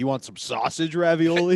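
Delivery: ordinary delivery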